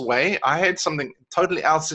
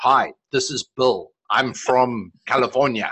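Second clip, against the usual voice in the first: slow, low fake American accent, South African-tinged; 4 semitones lower than usual. Showing listeners a sample voice message, in a south african take on an american accent. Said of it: "With Not with that accent, though".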